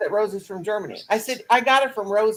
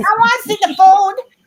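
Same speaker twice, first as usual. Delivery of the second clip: put-on very high, very loud baby voice; 12 semitones higher, 10 dB louder than usual. Asking to see another speaker's food, in baby talk. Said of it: "We just baby talk each other".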